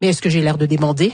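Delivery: low, dropped-pitch voice.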